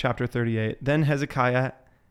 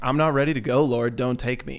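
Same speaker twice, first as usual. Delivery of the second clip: put-on, desperate pleading tone. Retelling a passage where a sick king begs God: Hezekiah crying out to God. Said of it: "Hezekiah starts crying out to God".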